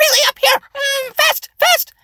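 very high-pitched, fast voice. Demonstrating the second vocal element, pitch: high pitch, fast. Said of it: "high pitch".

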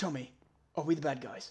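deep, hushed, low, murmured voice. Imagining how Gordon Ramsay would say a line: Gordon Ramsay impression. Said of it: "But Gordon Ramsay would be like".

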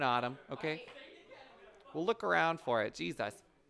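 ordinary delivery

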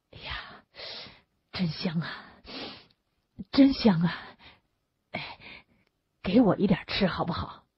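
murmuring on and on, repeatedly mumbling. A man keeps asking another man for some of his food, muttering over and over. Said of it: "他不停的念叨着".

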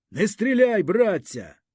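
sudden shout. Someone in the back row shouts as the officer commands fire. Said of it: "хтось разом з ним крикнув".

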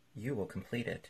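ordinary delivery, nothing marked

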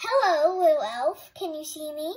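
ringing, very loud and clear calling voice. Reading a story aloud, the fairy calls down to a frightened elf: loud, clear voice. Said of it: "called to Henry in a loud, clear voice".

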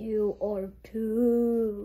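put-on whale voice with "too" stretched out. Reading a line from a book aloud, in a whale voice. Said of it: "my voice was like a whale voice".

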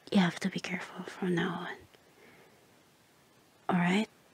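whispered voice. Sharing a secret with the listener, whispering. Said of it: "I'm whispering you like this just now".

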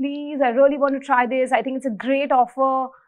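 tearful, crying, pleading tone through tears. Retelling pleading with a furious boss to take a job offer, retelling a crying plea. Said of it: "and I'm crying".

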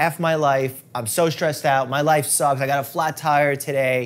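ordinary talk

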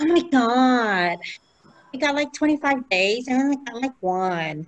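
mock mad, slow aggrieved tone, long stretched God. Retelling what people would say when complaining: imitating someone getting mad. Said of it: "getting mad at me, say".

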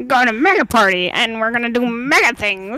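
animated hero voice. Asked by the other speaker to do a cartoon character's voice, the speaker obliges: Mega Man voice. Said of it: "can you do Mega Man's voice?".

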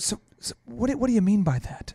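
genuinely baffled, innocent, sincerely clueless tone. Showing how to answer a buyer who says they have no time, sincerely clueless. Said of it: "ask it like you're either mildly mentally deficient or you're sincerely clueless".

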